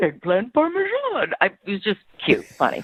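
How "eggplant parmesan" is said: put-on creature voice, very high. Retelling how someone said an order in a Yoda voice. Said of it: "he actually did it in a Yoda voice".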